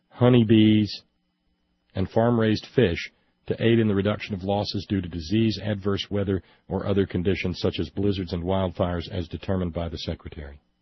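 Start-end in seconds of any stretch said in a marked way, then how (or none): none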